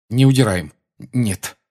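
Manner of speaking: short, terse. Dragging a trunk, a character answers a mocking portrait with a curt reply. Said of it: "кратко ответил Гарри".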